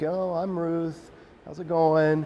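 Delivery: meek, slow, shy, timid little voice. Retelling how Ruth did not answer Boaz, acting meek Ruth. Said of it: "she doesn't just acquiesce, meek".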